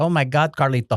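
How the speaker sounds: put-on Brazilian Portuguese accent. Retelling what a boss from Brazil said: imitating a Brazilian accent. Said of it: "so she talked like this".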